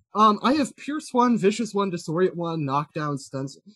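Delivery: plain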